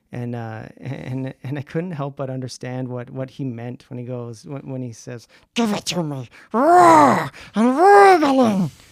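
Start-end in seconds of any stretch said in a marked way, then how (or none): 5.5-8.7 very loud, shrill, high, wildly sing-song with big swoops. Quoting a scene about cooked rabbits in a Gollum voice. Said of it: "your Gollum voice".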